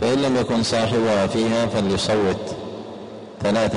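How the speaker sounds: ordinary talk, nothing marked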